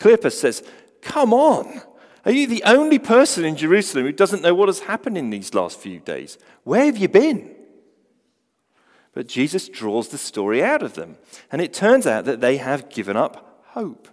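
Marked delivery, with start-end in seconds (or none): 1.0-7.5 put-on, sarcastic, incredulous, very high-pitched, swooping voice. Retelling a disciple's reply to a stranger's question: imitating incredulous Cleopas.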